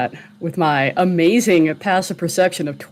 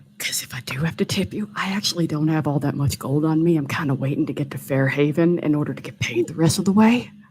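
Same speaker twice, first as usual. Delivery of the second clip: voice dropped low; 3 dB quieter than usual. A character in a tabletop game speaks after Elspeth sighs, lowered voice. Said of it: "lower his voice even more and go".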